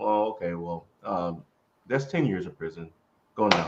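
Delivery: put-on deadpan, straight-faced judge voice. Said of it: "with a straight face".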